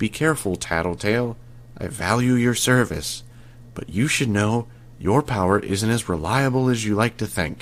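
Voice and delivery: civil, caring, very quiet, hushed voice. About to leave, he leans close to the narrator and speaks in a very quiet voice. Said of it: "he spoke in this very quiet voice".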